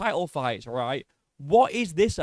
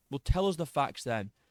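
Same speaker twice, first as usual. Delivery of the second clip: usual speaking voice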